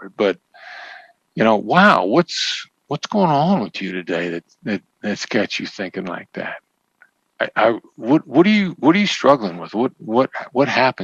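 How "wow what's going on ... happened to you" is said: genuinely curious, interested tone. Showing how to question a tenant or landlord, in a genuinely curious tone. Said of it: "Genuine curiosity automatically takes you out".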